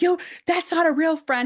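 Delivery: put-on shrill, very high, loud yelling. Retelling what Dominic says about Timmy: imitating Dominic yelling. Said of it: "He's always, like, yelling".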